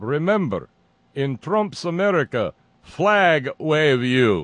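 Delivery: high, loud, slow, thick, bad fake Russian accent. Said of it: "responded in a thick Russian accent".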